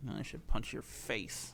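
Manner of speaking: slow, whispered, hushed grumbling mutter. Retelling what the ticket puncher said to the comedian: imitating someone muttering. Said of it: "under his breath".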